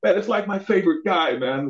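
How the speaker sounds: put-on high-pitched British accent. Retelling what a martial artist friend said, in British accent. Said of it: "in this British accent".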